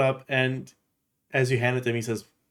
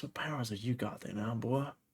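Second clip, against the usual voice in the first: softened voice, much quieter; 11 dB quieter than usual. Game narrator voices a character leaning in toward the listener; softened voice. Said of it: "he like softens his voice".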